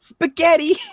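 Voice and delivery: spaghetti squeaked out very high, game character voice. Saying a word the way it is said in Hotel Mario. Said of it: "you gotta say it the way they say it in Hotel Mario".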